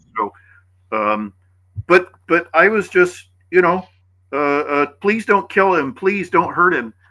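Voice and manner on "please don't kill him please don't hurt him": high, frantic, hysterical and desperate voice. Retelling a woman's plea for the man who attacked her: imitating a hysterical plea. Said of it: "she's hysterical".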